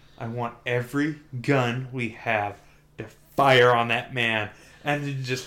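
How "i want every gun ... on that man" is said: plain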